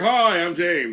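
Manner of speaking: loud, big barreling voice. Retelling greeting people at a conference: imitating own deep voice barreling through. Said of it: "I'm like this giant with this deep voice coming through, barreling through".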